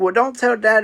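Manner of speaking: ordinary talk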